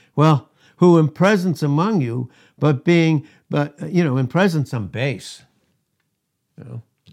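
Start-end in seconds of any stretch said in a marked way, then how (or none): 0.2-5.4 loud, very sarcastic, thickly laid-on tone. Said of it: "he very sarcastically said to them".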